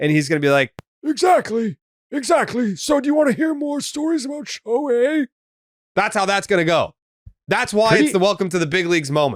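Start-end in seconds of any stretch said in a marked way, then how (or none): 1.0-5.3 put-on very high-pitched elderly man voice. Imagining a grandfather answering his grandkids years from now, in an old man voice. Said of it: "Really good old man voice".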